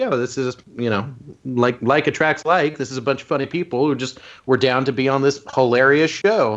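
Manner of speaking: plain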